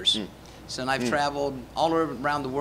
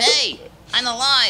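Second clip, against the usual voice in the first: very high, very loud, throaty puppet voice; 10 semitones higher, 10 dB louder than usual. Ventriloquist brings his puppet to life: throaty puppet voice. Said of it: "you chose a throaty voice for him".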